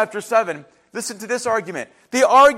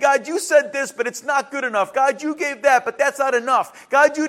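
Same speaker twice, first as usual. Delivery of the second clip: aggrieved, put-upon, argumentative complaining voice; 4 semitones higher than usual. Retelling how the hebrew people argued with god: imitating people arguing with god. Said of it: "the arguing and the fighting with God".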